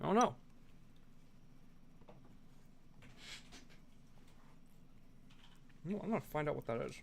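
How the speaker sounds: speaking with mouth full. Eating rice while talking to viewers, speaking with mouth full. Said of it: "Excuse me for speaking with my mouth full".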